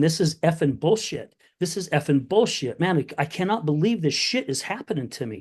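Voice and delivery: teary, tearful, disbelieving outburst. Speaker recalls sitting by a friend's fire pit after losing a leg; retelling a tearful outburst. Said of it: "tears in my eyes, going".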